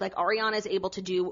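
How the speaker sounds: ordinary talk, nothing marked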